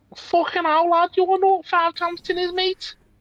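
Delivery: very high-pitched Liverpool Scouse accent. Imagining Siri voiced by a Scouse person: Scouse Siri, Liverpool accent. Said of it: "my best approximation of a Liverpudlian accent".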